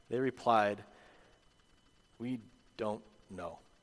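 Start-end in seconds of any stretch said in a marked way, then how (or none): 2.2-3.6 put-on mutter through gritted teeth, quieter, lower. Picturing people coming back to Jesus and replying, mock mumbling through gritted teeth. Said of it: "through gritted teeth and mumbling under their breath".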